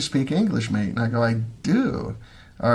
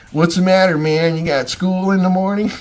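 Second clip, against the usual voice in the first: slips into a California accent, pitched up; 7 semitones higher, 4 dB louder than usual. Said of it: "The [name] California accent".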